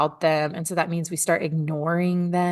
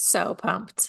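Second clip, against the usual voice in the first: flat, unenthusiastic tone; 5 dB quieter than usual. Asked by the host whether she's pumped up, unenthusiastic. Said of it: "can we add more enthusiasm to [name]'s voice".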